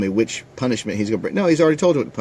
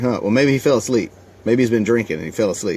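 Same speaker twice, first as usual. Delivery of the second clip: plain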